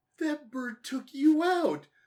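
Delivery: incredulous, disbelieving tone.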